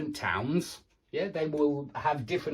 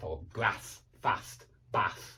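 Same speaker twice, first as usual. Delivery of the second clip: northern English vowels in grass and bath; 8 semitones lower, 4 dB quieter than usual. Speaker contrasting us and uk vowel sounds says the words in a northern uk english accent. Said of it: "That's my northern U K English".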